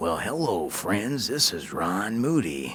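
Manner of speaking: slow, deliberate, carefully measured delivery. Showing the others a Ron Moody impersonation: Ron Moody impression. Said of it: "He thinks I do a very good Ron Moody impersonation".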